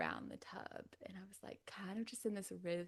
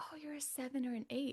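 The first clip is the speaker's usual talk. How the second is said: mock bubbly, high, all-excited announcer voice; 6 semitones higher than usual. Retelling what the woman checking her said, imitating someone all excited. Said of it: "like all excited".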